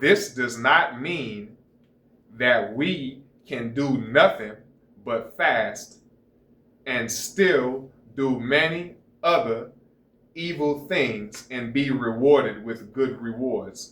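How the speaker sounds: slow, unhurried reading aloud. Reading a passage aloud to listeners, reading slowly. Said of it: "I might be reading slow".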